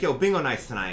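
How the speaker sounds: usual speaking voice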